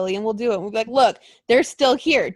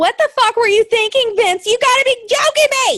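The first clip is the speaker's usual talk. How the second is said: very high, loud, upset yelling; 13 semitones higher, 7 dB louder than usual. Ranting about a favorite team losing the belts: shouting. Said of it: "Sorry, headphone users".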